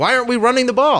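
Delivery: yelling. Retelling what one yelled at the team while watching: imitating own past yelling. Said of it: "that I was yelling at the team".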